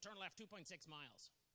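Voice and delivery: mock-aggressive, pushy put-on GPS voice. Telling a story about a GPS, quoting its directions: mock-aggressive GPS voice. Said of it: "I don't think I like your tone. A little bit aggressive".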